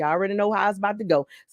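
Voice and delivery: rushed, rattled-off, very fast talk. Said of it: "and I'm talking fast".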